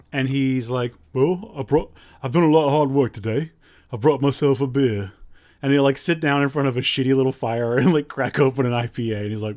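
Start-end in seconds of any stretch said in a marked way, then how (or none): 1.1-5.1 put-on speaking with a British accent. Retelling what a British camping YouTuber from Kent says: imitating his British accent. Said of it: "He's a British guy".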